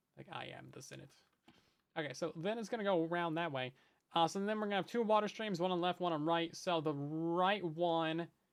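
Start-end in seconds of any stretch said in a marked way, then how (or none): 0.3-1.1 evil emperor villain voice. Joking while explaining a build, quoting a famous line: Palpatine voice. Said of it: "Just imagine that in a Palpatine voice".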